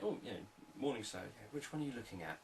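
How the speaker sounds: interested, lively and curious.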